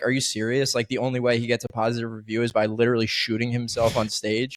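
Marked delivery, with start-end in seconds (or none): none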